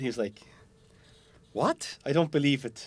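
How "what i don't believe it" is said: attempted South African accent. Telling how a visiting gel coat expert reacted to the boat, [name]'s South African accent. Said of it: "I'm trying to do the South African accent".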